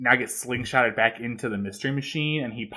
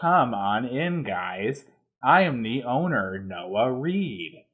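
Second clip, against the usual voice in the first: wooden, stilted, very slow line reading. Mocking a cartoon episode's side characters: imitating stilted voice acting. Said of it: "That's what they fucking sound like".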